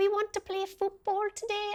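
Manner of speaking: bad, inaccurate Welsh accent, high little-girl voice. Describing young girls coming to play football, the speaker imitates them: little girl's Welsh accent. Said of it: "they had their little Welsh accents".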